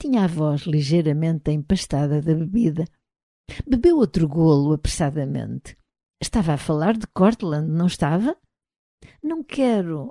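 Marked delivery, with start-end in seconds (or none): 9.2-10.1 soft, higher murmured words. Gifford responds as Ryan, drinking, asks about his grandfather, murmured. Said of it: "murmurou Gifford".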